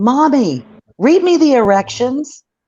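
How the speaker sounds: put-on very high, loud, slow, drawn-out kid holler. Mother recounts her son calling from the far end of the Walmart aisle: retelling a child's loud yell. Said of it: "and as loud as he can".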